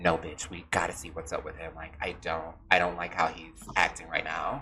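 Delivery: angry, furious, hushed half-whisper. Retelling a voice memo sent about the teacher, reenact an angry half-whisper. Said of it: "I'm just whispering very angrily".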